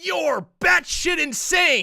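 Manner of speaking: shrill, loud, swooping put-on character voice. Showing off character impressions to a friend: Raiden voice. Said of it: "That's my best Raiden voice".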